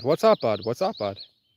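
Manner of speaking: Vermont accent with an evolved Irish ring. Showing how people in Vermont say their greeting, in an Irish-like Vermont accent. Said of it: "it's just an evolved version of an Irish accent".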